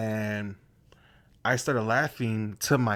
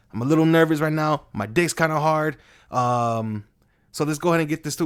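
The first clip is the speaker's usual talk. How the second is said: loud, high-pitched, hyped-up energetic delivery. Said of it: "just like".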